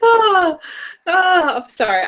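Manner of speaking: very high-pitched, slow, laughing through the words. Apologizing to the other speaker after a remark, laughing while talking. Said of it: "I'm laughing only because".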